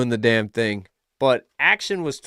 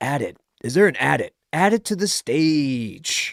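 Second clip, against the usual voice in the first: strip-club dj hype announcer voice. Reading an app prompt to add something to the stage, stripper dj voice. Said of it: "I'm not doing like a stripper uh D J voice".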